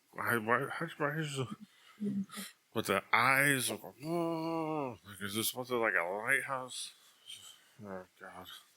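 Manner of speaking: put-on drunken muttering under the breath, drawn-out oh. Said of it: "he starts mumbling under his breath".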